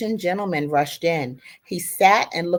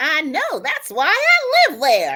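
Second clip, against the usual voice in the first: very high, shrill screaming with swooping pitch; 10 semitones higher, 4 dB louder than usual. Retelling a passenger's reply on a subway car: imitating someone screaming. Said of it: "she screamed back".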